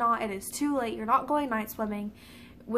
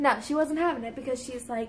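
usual speaking voice

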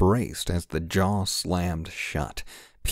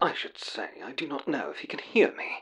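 crackly radio voice, high, slightly modulated, poor-link sound; 7 semitones higher, 4 dB quieter than usual. A voice calls to Crinnan, who cannot answer: slightly modulated radio voice. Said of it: "a slightly modulated voice said, as if through a shoddy radio connection".

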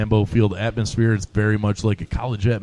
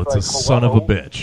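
ordinary talk

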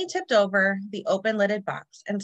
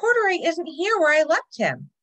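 high, exclaiming cry; 8 semitones higher, 4 dB louder than usual. A narrator reads Lisa calling to her mother at the laundromat, exclaiming. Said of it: "she exclaimed".

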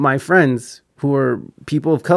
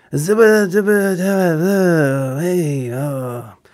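bad put-on elderly politician voice, higher pitch; 4 semitones higher than usual. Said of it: "that was my worst impression of, uh, Joe Byron".

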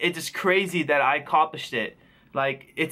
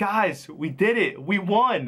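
very slow, stretched-out victory cry; 4 semitones higher than usual. Retelling a teammate celebrating before the match ended: imitating Cap screaming. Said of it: "Cap just starts screaming".

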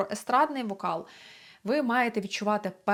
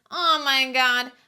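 obnoxious, affected nasal voice, pitched up; 4 semitones higher, 6 dB louder than usual. Voice practice exercise, grimacing and speaking in a nasty, mannered nasal voice. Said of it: "поговорити таким противним манірним голосом, направляючи звук ніби більше вніс".

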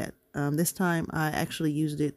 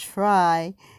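stress leaning on the word try; 3 semitones higher, 6 dB louder than usual. Speaker describes planning her Saturday page, stressing the word try. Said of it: "I'm going to emphasize the word try".

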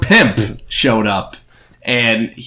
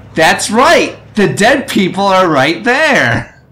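put-on cartoon girl voice, higher and louder; 9 semitones higher, 4 dB louder than usual. Playing a game after a viewer asks: Dora the Explorer voice. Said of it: "I'm gonna try and talk like Dora the Explorer".

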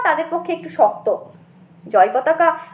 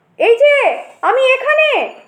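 high, loud shouted call-out; 8 semitones higher, 4 dB louder than usual. Jayapataka calls out to his grandfather, shouting out. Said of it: "Jayapataka চেঁচিয়ে উঠে হাত নেড়ে বললেন".

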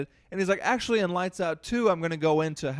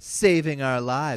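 put-on tough action-movie voice, lower; 2 semitones lower, 4 dB louder than usual. Retelling a horror movie scene, repeating a mother's line in a badass action movie voice. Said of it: "this badass action movie voice".

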